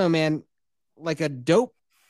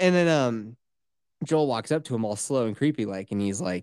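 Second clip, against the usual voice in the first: ordinary talk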